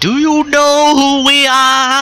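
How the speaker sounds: put-on laid-on thick New York accent, high, slow drawl. Retelling Bubba Ray's reply on being sent to the back of the line, thick New York accent. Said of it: "That thick New York accent of his".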